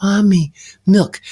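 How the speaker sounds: light airy tone. Recalling speaking as a child to his mother for milk, airy voice. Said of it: "I'm going to speak airy to my mother".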